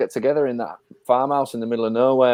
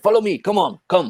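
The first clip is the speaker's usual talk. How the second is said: put-on French accent at a higher pitch; 6 semitones higher than usual. Recalling the Meaning of Life bit with the French waiter, Eric Idle's French waiter voice. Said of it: "Eric Idle as the French waiter".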